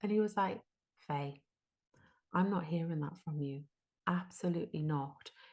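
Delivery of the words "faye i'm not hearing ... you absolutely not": put-on disappointed man's voice. Retelling how Mister Lynch answered her: imitating Mister Lynch's disappointment. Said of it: "the disappointment in his voice".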